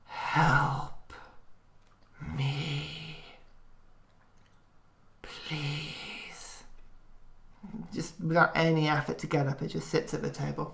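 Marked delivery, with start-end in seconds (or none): 0.1-6.6 echoing, quiet but powerful half-whisper, "me" drawn out. A game narrator voices a demon sitting at the table, echoing, quiet but powerful half-whisper. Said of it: "an echoing but quiet voice, a whisper but powerful".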